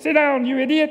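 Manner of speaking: high-pitched cartoon mountie voice, scolding. Retelling telling off a misbehaving kid, speaking in a Dudley Do-Right voice. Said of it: "Dudley would go".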